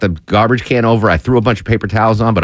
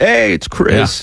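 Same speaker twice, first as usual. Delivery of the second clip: put-on New England accent, pitched higher; 10 semitones higher than usual. Imitating a former news director banning coffee-making: Chris Camp impression, New England accent. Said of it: "kinda like a New England Obama, I guess that accent is".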